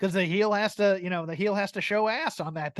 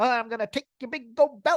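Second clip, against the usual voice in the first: playful, hammed-up, overacted teasing; 3 semitones higher than usual. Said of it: "he was also kinda being playful".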